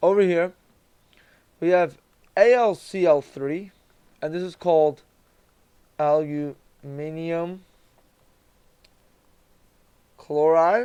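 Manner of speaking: talking with mouth full, chewing. Going over answers to a list, chewing food while talking. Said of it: "I'm chewing on some food".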